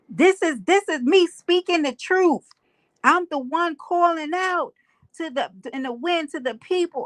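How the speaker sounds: high, heated screaming outburst. Retelling an argument on a live panel, imitating someone screaming. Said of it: "so he screams".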